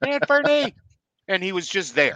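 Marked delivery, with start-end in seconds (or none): 0.0-0.7 very high, shrill, loud screaming call. Picturing a player's mother at the window, imitating a mother screaming a name. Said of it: "started screaming".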